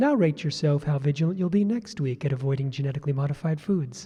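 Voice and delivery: honeyed, very hushed and deep voice. Speaker retelling how they address an audience: mock-sweet tone. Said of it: "in a sweet tone".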